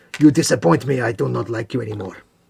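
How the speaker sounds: cat-folk character voice. Chatting while building orcs, joking in a Khajiit voice. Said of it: "I'm doing a Khajiit voice".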